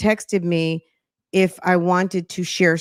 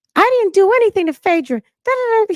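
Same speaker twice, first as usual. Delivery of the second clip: shrill, loud, very high-pitched voice; 14 semitones higher, 5 dB louder than usual. Imitating a man in a gossip story: imitating Apollo's voice. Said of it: "Apollo's voice always cracks me up".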